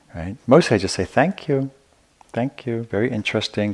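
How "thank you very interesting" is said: put-on, slow, pitched-up, sarcastic and dismissive. Quoting what the speaker says back to unwanted opinions, retelling a sarcastic reply.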